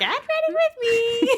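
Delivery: very high, drawn-out influencer voice. Repeating a stock phrase the two always say: Get Ready With Me voice. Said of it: "that exact phrase in that exact voice".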